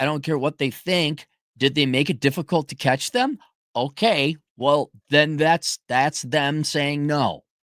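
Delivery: ordinary talk, nothing marked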